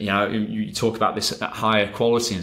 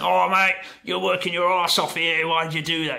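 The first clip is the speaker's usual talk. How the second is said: put-on broad Australian accent laid on thick, pitched up; 8 semitones higher than usual. Retelling what someone said about working their arse off: strong Aussie accent. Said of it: "my very best impression of a, a strong Aussie accent".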